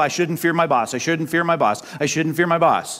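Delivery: normal talking voice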